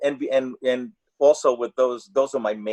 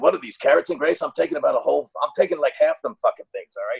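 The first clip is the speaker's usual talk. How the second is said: rough, goofy, wisecracking voice. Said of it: "And he said".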